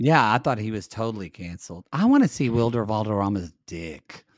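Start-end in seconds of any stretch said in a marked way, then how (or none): 1.9-4.2 predatory-sounding tone, much lower. Co-host making a crude remark, in a predatory-sounding tone. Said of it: "That sounded really, really gross. Like predatory".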